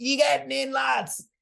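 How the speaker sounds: very high, raspy, rough holler. Retelling a lad calling up from the sea: imitating a shout. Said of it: "he shouts up at us".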